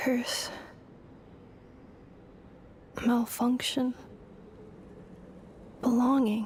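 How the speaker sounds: sorrowful, mournful machine-like robot voice. A robot character speaks single words while others listen, in a sad robotic voice. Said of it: "It's the saddest robotic voice I've ever heard".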